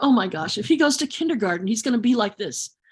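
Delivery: normal talking voice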